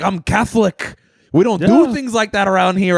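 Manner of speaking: play-acted mad, angry, deadly serious outburst. Retelling what a man at the cab stand said: imitating an angry man. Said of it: "all mad".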